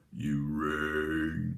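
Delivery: very low, deep voice with "rang" dragged out. Joking about being a weird guy in a basement: Lurch impression. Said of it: "that was my Lurch impression".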